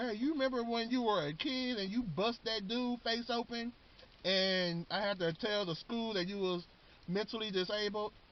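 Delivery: put-on high, heartstring-tugging old grandmother voice. Retelling how the grandmother pulls at his heartstrings, in a grandma voice. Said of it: "That's my grandma voice".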